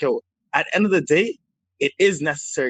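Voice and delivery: ordinary talk, nothing marked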